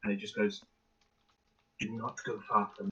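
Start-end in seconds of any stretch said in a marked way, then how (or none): 1.8-2.9 very hushed, quiet whisper, unlike her usual voice. Retelling what she whispered into another person's ear; very quiet whisper, different voice. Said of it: "whisper very quietly, but ve- like in a voice that is much different to her regular one".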